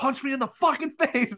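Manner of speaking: put-on very high-pitched screaming yell. Retelling screaming at him in a hallway to get a shot, retelling own screaming. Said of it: "like screaming at him".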